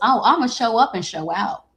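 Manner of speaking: showy, flashy delivery. Taunting a cheater, switching into a put-on Leo voice. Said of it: "in my Leo voice".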